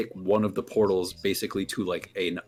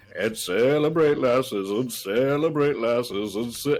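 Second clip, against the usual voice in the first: slow, glitchy repeat like skipping audio on loop; 3 semitones higher than usual. Retelling a scene where a performer's audio glitches: imitating looping glitchy audio. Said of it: "it just keeps looping for a second".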